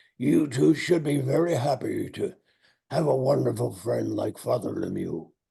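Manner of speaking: put-on hoarse voice. Retelling what Branch Rickey said about Father Lemieux: hoarse Branch Rickey voice. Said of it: "with that hoarse voice".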